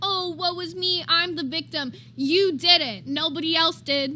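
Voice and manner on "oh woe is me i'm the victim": mocking, put-on self-pitying victim tone. Telling someone to stop playing the victim: imitating a put-on victim act. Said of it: "stop acting like".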